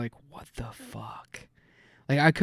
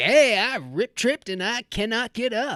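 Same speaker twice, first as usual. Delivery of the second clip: high, slow commercial caller ad voice; 8 semitones higher than usual. Imagining someone doing a Life Alert ad: imitating Rich Rivers in a Life Alert ad. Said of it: "he'd come on there like".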